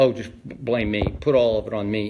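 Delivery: dry, insincere, low, lightly sarcastic mocking tone. Acting out how he blows off the media after the game, imitating a sarcastic Bill Belichick. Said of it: "there's a little sarcasm in there".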